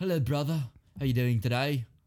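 fake, put-on English accent. An Australian speaker shows off a put-on English accent. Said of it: "I can do a pretty good English accent".

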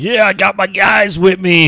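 hammy, overacted, boastful, very high voice. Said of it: "overacting crap".

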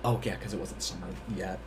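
soft, low hushed whisper.

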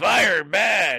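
classic horror-movie voice of a stitched-up monster.

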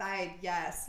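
normal talking voice

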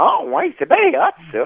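very high-pitched, slow, stretched-out comic drawl. Doing an impression for the others after announcing it: Mike Ward impression. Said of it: "je voulais faire mon imitation de Mike Ward".

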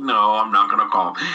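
plain

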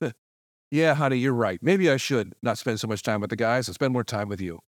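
very flat, level, toneless monotone. Retelling a scene partner's reply to his girlfriend: imitating a flat delivery. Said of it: "It's in a very flat way".

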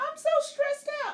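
play-acted crying voice, very high and tearful. Retelling what a crying child said when asked why: imitating someone crying. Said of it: "tears just falling".

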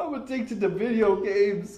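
high, tearful sobbing, words barely squeezed out. Retelling a boy's answer when pressed to speak, imitating a boy crying. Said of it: "he's just crying, could barely make the words out".

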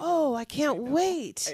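very slow, drawn-out, sarcastic fake enthusiasm. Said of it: "None of them are saying".

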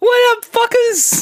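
very high, fired-off hype delivery. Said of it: "the one and only [name] Fuck [name]".

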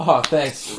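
speaking with a light little chuckle. Showing how a second thank you sounds: retelling a thanks with a little chuckle. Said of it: "with a little chuckle".

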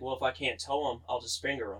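mock deadpan delivery. Retelling a cut joke from a movie scene, retelling a deadpan reply. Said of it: "he looks at him all deadpan".

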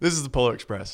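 speech broken up by laughter. Guessing a movie from a partner's clue: laughing while talking. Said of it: "I can't stop laughing".

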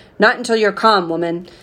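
ordinary delivery

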